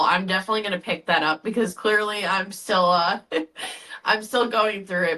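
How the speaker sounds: words coming out through crying, tearful. Thanking a guest while still grieving someone close, tearful. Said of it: "through my tears and everything".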